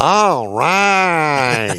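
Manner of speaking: high-pitched, long drawn-out sportscaster voice. Quoting a former local sportscaster: Anita Martini impression. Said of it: "That's my Anita Martini impression".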